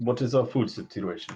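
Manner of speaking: clumsy, bad, fake put-on Russian accent. A player voicing the Haas asks the group; bad Russian accent. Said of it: "In Russian accent again".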